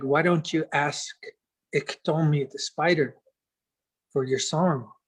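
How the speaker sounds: ordinary talk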